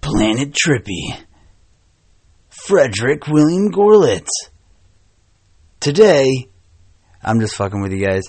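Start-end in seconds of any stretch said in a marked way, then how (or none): 0.0-6.5 very slow movie trailer narrator voice. Podcast host opens the episode in a movie narrator guy voice. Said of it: "That was my best go at a movie narrator guy voice".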